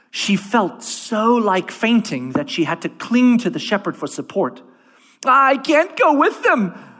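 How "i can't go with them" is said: shrill, high, loud gasped cry. Near fainting, clinging to the shepherd for support, she gasps. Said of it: "she gasped".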